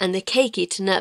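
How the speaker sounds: plain reading voice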